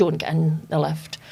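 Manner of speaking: normal talking voice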